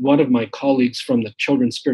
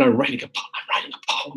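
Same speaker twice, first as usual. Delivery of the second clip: quiet whisper; 4 dB quieter than usual. Retelling a reply to the person beside them during a paper, whispering. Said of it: "because we were whispering".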